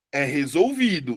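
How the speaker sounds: resolvido with its vi syllable leaned on. Teaching Adriano to say resolvido: stress on vi in resolvido. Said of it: "A sílaba mais forte é o vi".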